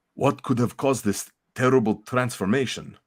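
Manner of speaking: attempted Russian accent turning Transylvanian. Reading a comic line aloud as Colossus: attempted Russian accent. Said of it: "I think I hear the Transylvanian coming through".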